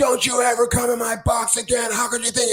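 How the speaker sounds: screaming at the top of his lungs.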